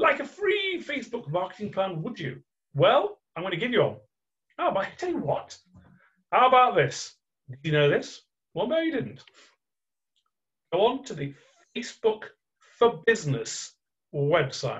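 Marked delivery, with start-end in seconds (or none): 0.0-2.4 high, small, wise little creature voice. Repeating a question he had just asked, now in a Yoda voice. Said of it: "I haven't said that in Yoda voice".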